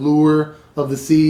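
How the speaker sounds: lure stressed. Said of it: "that's supposed to be a pun".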